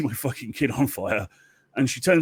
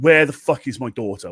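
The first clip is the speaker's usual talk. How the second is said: acted-out angry goddess voice, furious, louder; 4 dB louder than usual. Retelling a myth, the goddess's demand for her daughter: acting out an angry goddess. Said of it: "she's pissed, like, proper pissed".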